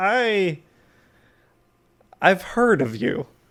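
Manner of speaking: amused quiet chuckling. Voicing a character who chuckles to himself: amused chuckle. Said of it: "he chuckles to himself".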